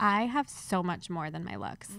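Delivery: ordinary talk, nothing marked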